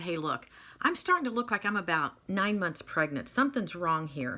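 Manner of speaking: ordinary talk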